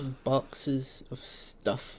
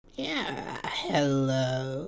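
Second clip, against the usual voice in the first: eerie, unsettling, creepy, drawn-out delivery. Voicing a robed man in a role-play scene, in a creepy voice. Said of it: "he's such a creepy voice".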